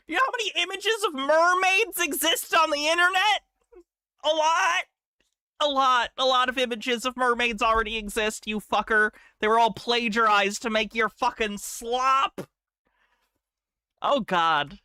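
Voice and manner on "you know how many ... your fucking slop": furious, high-pitched angry yelling rant. Ranting about a slideshow made by ChatGPT, angry yelling. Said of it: "I'm yelling at something".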